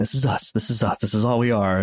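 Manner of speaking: mock-loopy dazed voice. Retelling a film character's scene, imitating a loopy man. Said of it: "he's like a little loopy".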